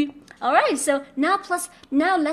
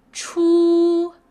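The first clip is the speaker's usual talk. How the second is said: flat high first tone on chu, drawn out; 3 semitones higher, 4 dB louder than usual. Teacher modeling a Chinese first tone for a learner: high flat tone on chu. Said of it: "When it's a first tone, it's just high pitch ... high pitch and flat".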